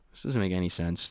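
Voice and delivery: ordinary talk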